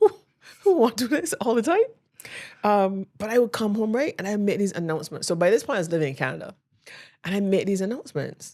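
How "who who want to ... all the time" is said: put-on high, tearful, sobbing crying voice. Retelling doing accounting homework in the past: mock crying. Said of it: "doing the homework and crying".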